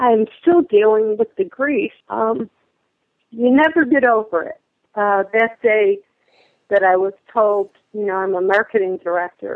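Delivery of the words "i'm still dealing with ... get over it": voice catching, getting choked up. Telling someone about still dealing with grief, getting choked up. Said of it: "I'm getting choked up now".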